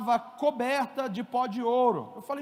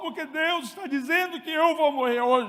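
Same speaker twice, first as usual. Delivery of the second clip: put-on weepy, tearful crying in a child voice; 3 semitones higher than usual. Father retelling what his son Davi told him, imitating Davi crying. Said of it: "botou aquela voz de choro espiritual".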